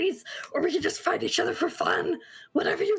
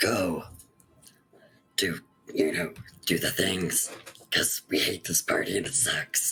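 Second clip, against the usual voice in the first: whispered aside in put-on voice, lower. Whispering in character to Charity so others can't hear: whispering in character. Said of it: "I'm going to whisper to Charity".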